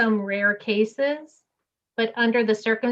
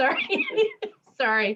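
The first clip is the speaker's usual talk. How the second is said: very high, swooping voice through laughter; 9 semitones higher than usual. Apologizing for laughing during a meeting, laughing while talking. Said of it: "I'm laughing at my husband in the apron".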